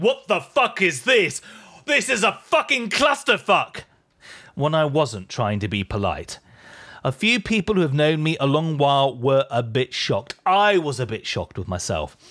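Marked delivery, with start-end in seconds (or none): 0.0-3.8 high, furious shouted rant. Retelling losing control backstage during a crowded changeover: imitating a Gordon Ramsay rant. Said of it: "I did the full Gordon Ramsay, shouting out".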